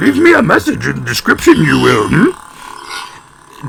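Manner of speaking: put-on old creature voice. Video host addressing viewers, doing a Yoda impression. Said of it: "if you liked my Yoda impression".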